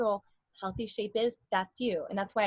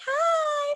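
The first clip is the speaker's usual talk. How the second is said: very high-pitched, loud, teasing little voice; 5 dB louder than usual. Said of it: "your voice is so high".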